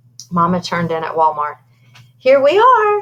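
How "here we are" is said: acted, forced cheery tone, very high and raised. Narrator reading Mama's words as they arrive at Walmart, in a fakey bright voice. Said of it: "she said in a fakey bright voice".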